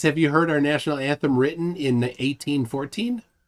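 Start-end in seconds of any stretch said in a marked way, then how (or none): none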